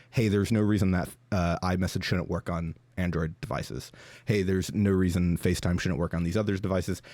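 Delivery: plain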